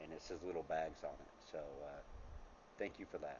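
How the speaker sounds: soft, choked-up emotional voice.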